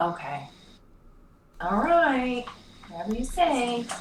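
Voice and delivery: hesitant, reluctant tone. Agreeing to the party's plan to just kill them: hesitant. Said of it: "why do you sound hesitant about killing them?".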